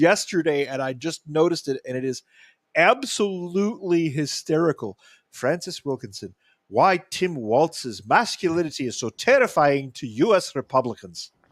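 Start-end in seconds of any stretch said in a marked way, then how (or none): 5.3-11.3 very bad put-on Irish accent, drifting into Scottish. Reading an article headline aloud in a bad irish accent. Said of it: "That's my worst Irish accent".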